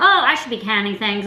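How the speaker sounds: ordinary delivery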